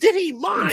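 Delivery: voice pushed very high in pitch. Retelling a ballplayer's answer to an interviewer's question, imitating his high voice. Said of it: "he's got that high voice".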